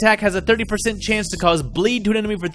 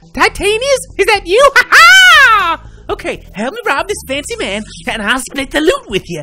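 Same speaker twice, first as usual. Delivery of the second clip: crazy put-on mad king voice; 12 semitones higher, 7 dB louder than usual. Voicing King Roberto robbing a fancy man: crazy Roberto voice. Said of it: "I wanna do a crazy Roberto voice".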